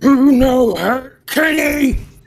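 slow, enraged battle cry. A player voicing Ares, raging in combat, calls to Kenny: in a rage. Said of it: "because I'm in my rage".

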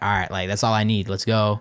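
normal talking voice

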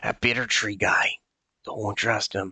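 whispered with a hiss. Voicing a little two-foot figure who warns you as you approach, in a hissing whisper. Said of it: "kind of whispers, and it almost sounds like a hiss every s or so".

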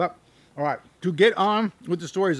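speaking through food, chewing. Youtuber eating an apple before telling stories, talking with mouth full. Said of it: "I chew with half my mouth full here".

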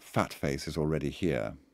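ordinary delivery, nothing marked

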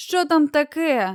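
just-woken, half-asleep, sleepy and drowsy voice. A mechanic who had been sleeping answers the giant calling him, in a sleepy voice. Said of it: "Сонним голосом озвався механік".

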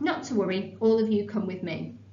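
ordinary talk

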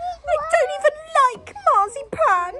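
protesting tone. Reading a story aloud, voicing a character everyone turned to look at, protesting. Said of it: "she protested".

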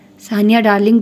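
ordinary delivery

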